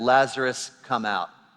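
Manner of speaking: put-on loud calling voice. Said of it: "in a loud voice".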